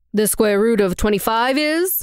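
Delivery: bored, uninterested voice. Narrator reads a character's question as he writes math on the board: bored tone. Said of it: "said in a bored tone".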